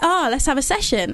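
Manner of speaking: ordinary delivery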